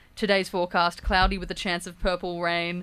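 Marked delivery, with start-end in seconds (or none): none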